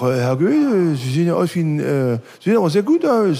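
Saxon dialect voice. Retelling what a police officer said to him at the station, put-on Saxon dialect. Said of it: "im sächsischen Dialekt".

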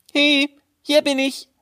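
high, slow, taunting, teasing call. The little tailor calls to the guards from another corner, calling out.

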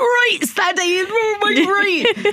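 put-on very high, slow, overexcited squeal, native accent slipping out. Retelling hosting a show at short notice: imitating own high-pitched excited voice. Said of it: "I was so high-pitched and ... my accent came out from back home".

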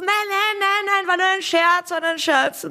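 high, calling voice. Retelling how the speaker called after someone who walked off, calling after him. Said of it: "ich habe dann nachgerufen".

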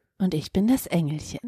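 put-on soft, robotic voice-assistant tone. Trying out a line as the little angel, Siri voice. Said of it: "das ist Siri".

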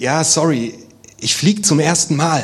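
sorry-sounding voice. Telling a joke as the pilot answering the passenger: apologetic. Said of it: "er sagt entschuldigend".

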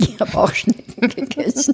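talking through a laugh. Asked whether they have ever eaten snails, answering while laughing. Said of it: "Warum lachst du das?".

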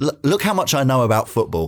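plain

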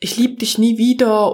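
ordinary talk, nothing marked

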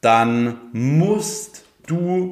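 musst stressed and stretched out slowly. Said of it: "also wirklich Betonung auf musst du".

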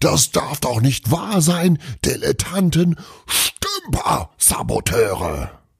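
furious, raging bellow, pitched very high. An angry old man, throwing things to the floor, roaring in anger. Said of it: "brüllte".

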